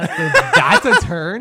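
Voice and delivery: high-pitched, squeaky baffled reaction. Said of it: "I was just like".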